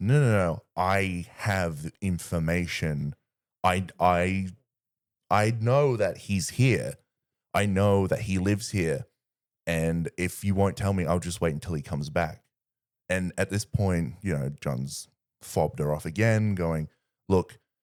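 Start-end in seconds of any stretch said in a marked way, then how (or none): none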